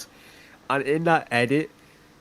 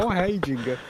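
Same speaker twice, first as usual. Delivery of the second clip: mock, high, breezy, dopey, goofy cheery voice; 6 semitones higher than usual. Retelling a masked character's return, imitating a big stupid smile. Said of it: "there's a big stupid smile on his face".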